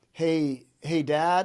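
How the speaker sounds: mock rattled, shaken-up voice. Father retells his son calling him, imitating a shaken-up voice. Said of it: "he sounded like really shaken up".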